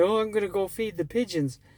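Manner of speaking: put-on New York accent, rattled off fast. Recalling a comment made by the Uber CEO, imitating his New York accent. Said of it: "his New York accent".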